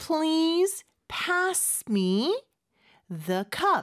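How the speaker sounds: extremely slow, drawn-out, careful reading voice.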